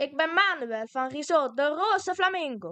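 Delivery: put-on Spanish accent. Asked to let the listeners hear it, the speaker gives Manuel's Spanish accent. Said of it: "Kun je onze luisteraars al een klein stukje van het Spaanse accent laten horen?".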